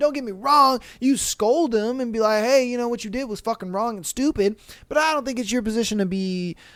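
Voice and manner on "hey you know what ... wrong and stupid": ordinary talk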